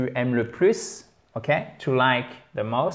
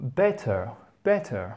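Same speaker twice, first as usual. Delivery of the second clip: British English pronunciation of better. Showing learners how a word sounds in British English: British English pronunciation. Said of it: "in British English".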